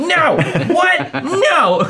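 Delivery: shrill, very high-pitched shouted voice. In character, yelling at a scroll while pointing at it: yelling in character. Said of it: "Yeah, I'm yelling".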